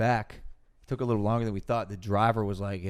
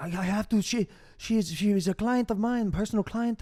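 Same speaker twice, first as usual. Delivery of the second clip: high-pitched put-on Russian accent; 12 semitones higher than usual. Retelling how the driver pulled over and explained, imitating a russian accent. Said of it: "I don't know if this is a Russian accent".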